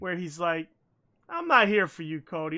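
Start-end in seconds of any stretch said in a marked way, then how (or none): 1.3-2.6 put-on patronizing, condescending voice. Retelling a wrestling segment, imitating Sting: patronizing big brother. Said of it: "Sting is doing the big brothering".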